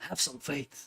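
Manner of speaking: terrible, badly done breathy character voice, breathed out. Quoting a game character to urge faith in a team: terrible Dutch van der Linde impression. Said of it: "that's a terrible impression".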